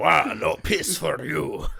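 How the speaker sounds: very slow, rough, creaky, drawn-out rasping voice. Joking with friends about losing the game: Wario voice. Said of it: "that was a really good Wario".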